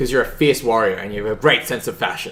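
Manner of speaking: ordinary talk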